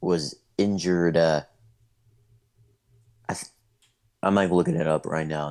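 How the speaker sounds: stuttering a bit, halting and hesitant. Looking something up while explaining how a final ended: stuttering a bit. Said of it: "That's why I'm, like, uh, just, uh, stuttering a bit".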